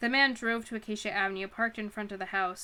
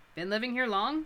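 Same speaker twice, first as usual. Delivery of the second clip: usual speaking voice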